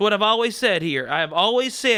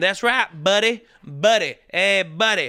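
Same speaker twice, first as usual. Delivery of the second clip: put-on American Southern accent. A speaker demonstrating how any good southern accent starts, in a southern accent. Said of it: "any good Southern accent will start with someone saying".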